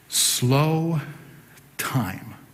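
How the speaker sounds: slow and time both stressed, slowly drawn out. Discussing a Keats line with two stressed words together: equal stress on slow and time. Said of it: "two words together that are both stressed".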